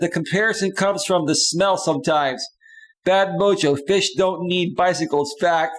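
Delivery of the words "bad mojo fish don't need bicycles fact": ordinary talk, nothing marked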